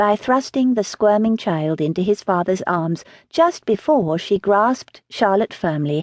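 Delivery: plain reading voice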